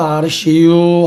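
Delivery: Chungcheong regional dialect and accent. Explaining regional speech styles to an audience, in Chungcheong dialect. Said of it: "충청도".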